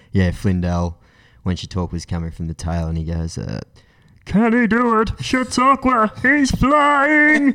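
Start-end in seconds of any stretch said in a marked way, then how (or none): 4.2-7.5 excited, higher race-calling announcer voice. Recalling a famous race call, imitating Darren Flindell: excited race-calling voice. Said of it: "that was my Darren Flindell".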